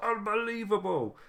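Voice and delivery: very high, squeaky, awful announcer voice. Recalling a nineties wrestling moment: awful Vince McMahon impression. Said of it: "That was an awful impression".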